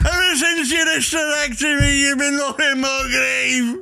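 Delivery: put-on shrill, very high old granddad voice. Acting out a bit as the old granddad character: old man granddad voice. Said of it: "Old man's granddad".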